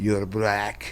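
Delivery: threatening, growling voice. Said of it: "like, more menacing".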